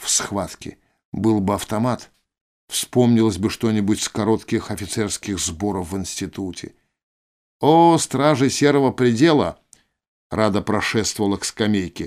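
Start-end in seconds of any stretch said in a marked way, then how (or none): 7.6-9.6 patronizing, teasing, mocking, condescending, pitched-up voice. Rada greets the guards as she walks to a bench, mockingly condescending. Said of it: "Тон у нее был насмешливо-снисходительный".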